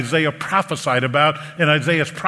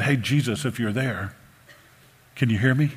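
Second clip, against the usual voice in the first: mock timid voice, lower and quieter; 4 semitones lower, 5 dB quieter than usual. Contrasting a timid call to Jesus: imitating a timid call. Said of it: "This is not a timid".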